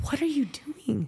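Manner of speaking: high, stunned whisper.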